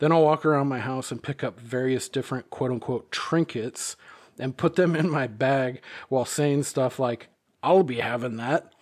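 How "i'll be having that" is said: put-on creature voice, like a goblin. Speaker demonstrates what she says while collecting trinkets, in her goblin voice. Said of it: "laughing maniacally in my goblin voice".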